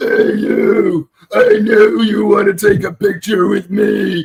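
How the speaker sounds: slow, powerful villain voice. Retelling dubbing a costumed fan's lines: Goldar voice. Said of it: "I definitely prefer to do the Goldar voice".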